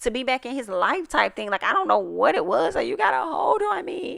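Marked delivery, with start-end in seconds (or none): 1.6-4.2 mock pleading in a higher pitch. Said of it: "it sounded like you was pleading".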